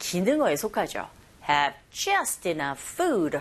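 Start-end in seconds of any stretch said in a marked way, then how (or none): 1.5-3.4 very slow, stress on just, falling tune. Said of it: "이렇게 발음하시면 됩니다".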